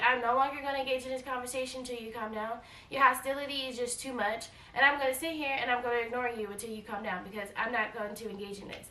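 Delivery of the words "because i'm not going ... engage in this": normal talking voice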